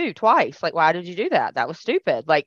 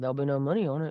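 soft, low, nonchalant, offhand voice. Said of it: "so nonchalantly".

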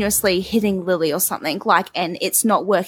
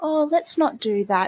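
put-on extra-calm, gentle-parent tone, voice lifted; 7 semitones higher than usual. Imitating a parent in a gentle parenting video: imitating a really calm voice. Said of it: "in a really calm voice".

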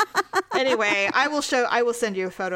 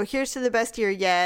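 ordinary talk

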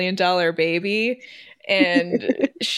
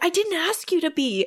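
put-on screaming, higher; 10 semitones higher than usual. Retelling a teen's angry retort to a helper: imitating someone screaming. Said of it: "'cause she's screaming at him".

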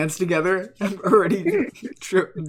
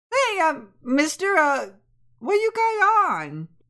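put-on little boy voice, much higher; 10 semitones higher than usual. Acting out a little boy running up to a man in a suit, little boy voice. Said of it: "Boy's gonna go".

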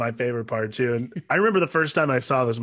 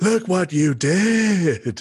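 grand voice of God, pitched up, long did; 5 semitones higher, 3 dB louder than usual. Describing Bradley Dourif's movie scene explaining to Ripley, in his voice-of-God delivery. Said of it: "this awesome like voice of God thing".

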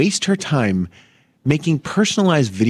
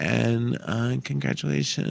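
play-acted listless, uninterested, can't-be-bothered tone; 8 dB quieter than usual. Retelling a congratulations video sent to Suzanne: imitating a bored tone. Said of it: "And she's just, like, bored".

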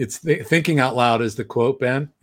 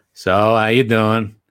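put-on old man voice, louder; 5 dB louder than usual. Imitating Granddad calling from Pennsylvania: imitating Granddad on the phone. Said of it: "here he is calling me from".

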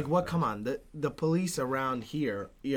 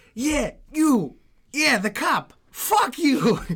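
shrill, very loud, high-pitched all-out yelling; 12 semitones higher, 9 dB louder than usual. Recounting a young man he is pulling away, imitating someone yelling at a cop. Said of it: "He just starts yelling at the guy".

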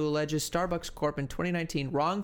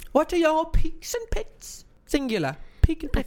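very high, swooping, British accent creeping in; 12 semitones higher, 6 dB louder than usual. Asking the other speaker for peaks and pits: gradually slipping into British accent. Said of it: "a gradual going into a British accent".

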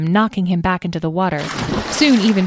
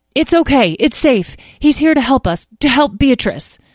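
raised, pitched-up voice calling across; 6 semitones higher, 4 dB louder than usual. Narrating a boy calling to the others backing away from the unicorn, calling out. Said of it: "Tom called out".

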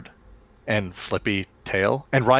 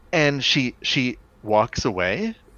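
usual speaking voice

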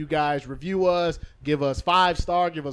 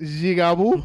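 fake Haitian accent, said louder; 5 dB louder than usual. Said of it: "Why you gotta put the Haitian accent on it?".

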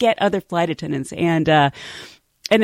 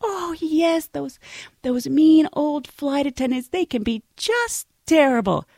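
sweet, kindly, soothing, sympathetic, pitched up; 7 semitones higher than usual. Retelling a coworker comforting a new flight attendant: imitating a sweet sympathetic voice. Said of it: "this sweet girl being so sympathetic".

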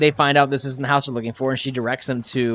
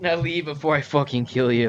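normal talking voice

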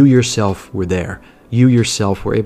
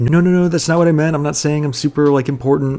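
quick, nervous tone. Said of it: "Then she got nervous".

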